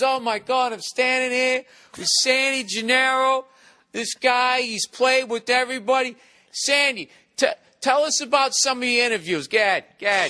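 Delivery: put-on eager, excited, high New York interviewer accent. Imitating an excited interviewer from Staten Island: stereotypical New Yorker voice. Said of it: "This is how he does the interview. He goes".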